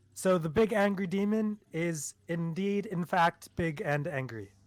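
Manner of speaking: loud, drawn-out, in-character yelling. Calling out in character to the rest of the group: yelling in character. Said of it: "I'll yell out to the rest of the group".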